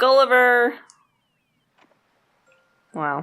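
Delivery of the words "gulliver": full, high-pitched yell. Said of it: "You have to yell his name".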